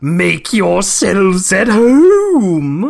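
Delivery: swooping cartoon villain voice, "home" drawn out. Cast as K. Rool in the story, coming up behind Cranky, in a K. Rool voice. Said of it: "I think it might be my favorite K. Rool voice".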